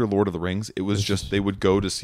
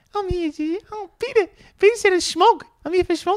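put-on New Zealand accent, much higher; 4 dB louder than usual. Speaker shows they could pass as a native kiwi extra: put-on new zealand accent. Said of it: "put on the accent".

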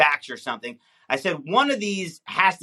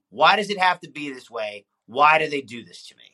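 ordinary delivery

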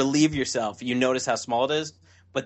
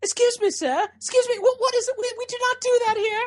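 very high put-on British accent; 4 dB louder than usual. Retelling what a British flight attendant said at the door: imitating a British flight attendant. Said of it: "it's a British flight attendant, and she's like".

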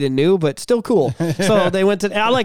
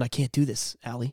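put-on upset voice, lower and quieter; 6 semitones lower, 10 dB quieter than usual. Retelling the stepdad speaking to mom: imitating upset stepdad.

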